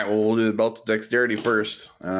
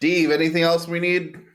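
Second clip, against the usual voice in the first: high-pitched, raised yelling; 8 semitones higher than usual. A player calls to Steve, who is down in the scroll section: yelling. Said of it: "I don't know why I'm yelling".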